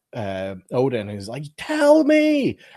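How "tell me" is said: very loud, high-pitched, guttural bellow. Retelling Loki lashing out at Odin: imitating Loki's deep guttural outburst. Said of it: "such a deep, powerful, guttural response".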